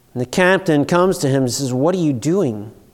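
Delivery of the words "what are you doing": put-on desperate tone. Retelling the ship captain's words to a sleeping Jonah, imitating desperation. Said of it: "There's desperation in their voice".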